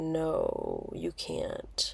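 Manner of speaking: put-on breathy, whispered, judging hush. Retelling what a roommate said about sandwich bags: imitating a judgmental tone. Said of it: "I know how that tone I just described".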